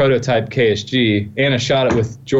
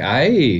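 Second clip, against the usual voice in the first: pleased, approving aye in an upbeat tone. Showing how an eye inflection signals a really good thought: pleased 'aye'. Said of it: "So it's either a really good thing, like".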